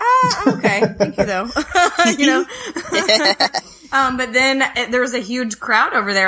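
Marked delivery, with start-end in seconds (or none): 0.0-1.5 polite, through laughter. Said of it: "And I was like".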